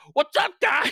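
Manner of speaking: very high, loud, manic delivery. Comparing a voice to an actor who plays manic characters: Jason Mantzoukas impression. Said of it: "he's just like".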